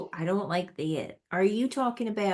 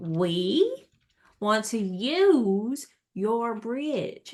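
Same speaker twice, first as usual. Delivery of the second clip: very slow, stretched-out Southern American drawl; 3 dB louder than usual. Showing something speaking more slowly, slow Southern American accent. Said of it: "my southern accent's coming through on that one".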